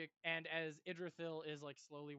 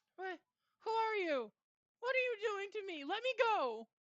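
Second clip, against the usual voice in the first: put-on very high, very loud, shrill, terrified child's voice; 8 dB louder than usual. Voicing a screaming small child whom a stranger has come to comfort, petrified child. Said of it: "looks petrified right now".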